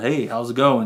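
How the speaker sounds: put-on American man's accent. Retelling a film scene where a character puts on a voice: imitating an American guy voice. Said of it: "sounds like an American guy".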